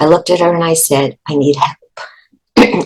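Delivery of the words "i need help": choked-up, catching voice breaking with emotion. Recalling asking the woman at the desk for help as a child: choked up. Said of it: "I get a little choked up when I think about it".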